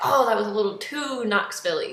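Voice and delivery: ordinary delivery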